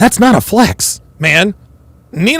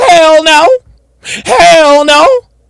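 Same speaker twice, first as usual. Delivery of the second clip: high, loud, emphatic shout. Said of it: "And her answer was".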